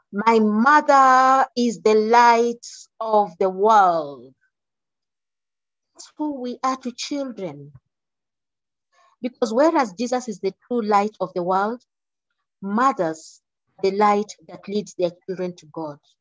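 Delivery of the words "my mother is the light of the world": very loud, very slow, beaming, full of pride. Retelling what the speaker's daughter said about her mother: very loud voice. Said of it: "she said in a very loud voice".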